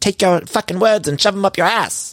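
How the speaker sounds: play-acted, high-pitched yelling outburst. Act out the cut to James yelling at someone, imitating James yelling. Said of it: "we see him yelling".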